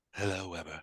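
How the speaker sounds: sexy, sultry, seductive spaceship computer voice. Voicing an AI, as the other player asked, in a sultry seductive space voice. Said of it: "let's hear a more sultry, uh, uh, tone of voice there".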